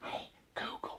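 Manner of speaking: hushed whisper under the breath. Explaining how a listening phone works, whispering so the phone won't pick it up. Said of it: "which I'm whispering because my phone will pick it up".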